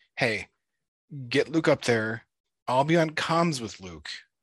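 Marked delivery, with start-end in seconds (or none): none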